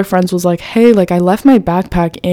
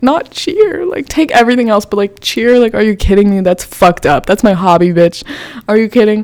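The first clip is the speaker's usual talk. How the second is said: sobbing, pleading outburst through tears; 3 semitones higher than usual. Retelling begging to keep cheer, imitating own past sobbing. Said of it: "I'm sobbing. I'm like".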